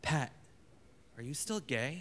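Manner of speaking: soft, gentle, quiet voice with a rough edge. Quoting a mother's first words after waking from a coma, imitating her soft, rough voice. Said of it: "in a soft but rough voice".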